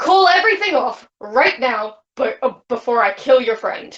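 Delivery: menacing, maximally intimidating tone. In a role-play, holding glass to a woman's throat and demanding, as intimidating as possible. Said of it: "In the most intimidating way possible".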